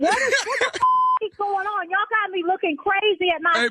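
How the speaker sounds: worked-up, upset, confused outburst, high-pitched. Answering a caller who keeps asking about a friend: agitated and upset. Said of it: "calm down, baby".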